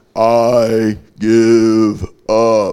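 very slow, flat slow-motion voice.

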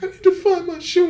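mock sobbing, high, tearful crying voice. Speaker retells a woman at the movies after the lights came up, imitating her crying. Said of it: "And she's like crying and shit".

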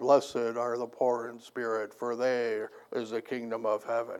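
low, hushed, stern flat monotone. Imitating how Hollywood films portray Jesus speaking, monotone Hollywood Jesus impression. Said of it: "he talked in a monotone and said".

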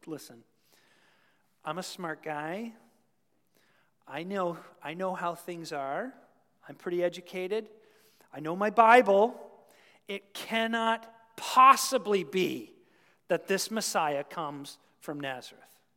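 sneering, snobbish, know-it-all intellectual tone. Retelling how a man answered Philip about Jesus from Nazareth: imitating a sneer. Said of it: "he sort of sneers and he goes".

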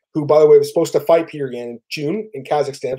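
ordinary delivery

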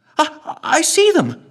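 bright, excited, very high chirp. Eliza, as blurred figures appear in the viewfinders, chirps excitedly. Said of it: "chirped Eliza excitedly".

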